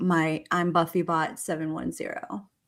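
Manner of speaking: low, hushed, sexy voice. Reading a legal document aloud, then breaking into a sexy BuffyBot voice. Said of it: "I was trying to sound sexy".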